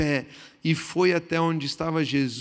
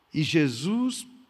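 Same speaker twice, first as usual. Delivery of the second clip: ordinary delivery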